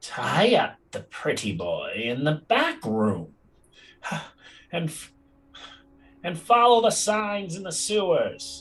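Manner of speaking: nasally voice. Narrating a thing that speaks in a second, different voice: nasal voice. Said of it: "in a nasally, then it's suddenly another voice".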